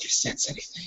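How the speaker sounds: hushed, soft, breathy sort-of whisper. A player character turns to a Jedi NPC, in sort of a whisper. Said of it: "I go in sort of a whisper".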